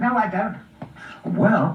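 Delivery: ordinary delivery, nothing marked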